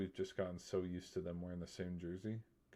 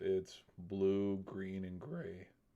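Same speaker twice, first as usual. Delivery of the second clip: slow voice breaking and cracking on the words; 3 dB louder than usual. After talking for three straight hours, voice cracking. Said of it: "there's another voice crack".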